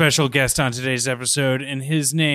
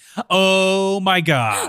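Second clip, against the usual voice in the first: dialed-up, hyped excitement, pitched up; 6 semitones higher than usual. Opening a show about TV with a co-host, amped-up excitement. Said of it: "Should I amp it up a little bit?".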